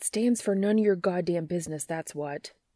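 grumbled, grumbling delivery. Reading a story aloud, a character refusing to answer: grumbling. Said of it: "he grumbles".

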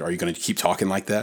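ordinary talk

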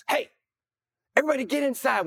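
mock sergeant major bark, high. Retelling a battle, the sergeant major yells: imitating the sergeant major yelling. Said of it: "the sergeant major yells".

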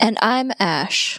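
bored deadpan voice. Redoing another speaker's intro line: bored deadpan Wes Anderson delivery. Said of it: "Nailed it".

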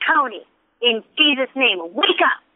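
put-on firm, forceful, insistent yell. Retelling commanding a man to wake up after chest compressions, retelling a forceful yell. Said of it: "And I was yelling".

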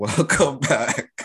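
talking while chuckling, laughing through words. Welcoming listeners back to the episode, laughing while talking. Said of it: "Why are you laughing".

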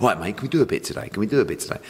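nagging, pestering, repetitive tone. Retelling how the other speaker kept asking for an interview: imitating pesty nagging. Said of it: "In a really pesty way".

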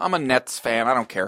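ordinary talk, nothing marked

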